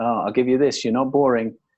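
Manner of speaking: plain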